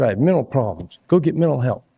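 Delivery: screaming voice. Retelling what a cop said to the speaker: imitating someone screaming. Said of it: "by screaming at me".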